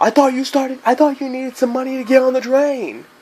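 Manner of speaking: put-on very high taunting voice. Retelling confronting a man who asked for train money: retelling getting louder. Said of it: "I started getting louder".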